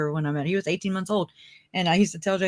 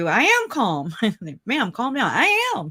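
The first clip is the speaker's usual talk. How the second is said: raised, swooping voice with a little tone; 4 semitones higher than usual. Retelling what they said to a woman, ma'am, in a retold raised voice with tone. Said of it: "I start raising my voice, and I have a little tone in my voice".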